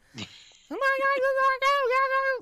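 very high, loud, shrill squeaky voice. Talking about Charlie Day playing Luigi, doing a squeaky Charlie Day voice. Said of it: "the squeakier voice, the better".

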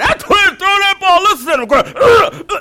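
very loud, very high, booming country holler. Recalling a man cheering at the kids' ball games, retelling a loud country shout. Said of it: "he'd be so country and loud".

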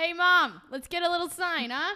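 high, loud, facetious voice. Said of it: "very facetious that we're like".

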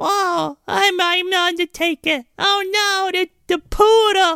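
little voice, very high, slow, very drawn out. Imitating a wrestler scared of a poodle, in a little voice. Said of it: "he's got that little voice".

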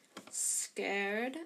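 mumbled under breath. One character mutters to another so the professor cannot hear, muttered. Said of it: "muttered Malfoy".

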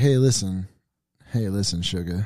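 mock drunk, slurred-style talk. Retelling a FaceTime call made while a little drunk: imitating own drunk self. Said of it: "I was a little drunk".

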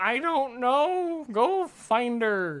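very high, very slow, goofy put-on voice. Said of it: "What's that voice?".

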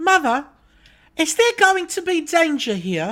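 put-on English accent, very high British child voice. Retelling what a child on a ride asked, imitating a UK child's voice. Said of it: "I'm gonna do the voice for you".

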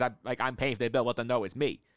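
ordinary delivery

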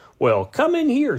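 very high, insistent voice. She calls to the narrator, who has just stopped the car, demanding. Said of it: "she demanded".

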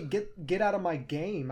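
plain

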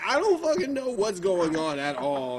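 ordinary delivery

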